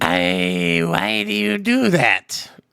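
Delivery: mock glitched-out voice. Speaker trying to imitate a glitched-out voice, attempted glitchy voice. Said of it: "I can't make a glitch voice".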